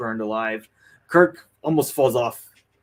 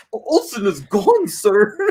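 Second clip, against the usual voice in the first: very high-pitched, drawn-out, amazed and stunned delivery; 10 semitones higher, 7 dB louder than usual. Retelling a line from Chekov in a movie: imitating Chekov, so surprised. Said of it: "so surprised".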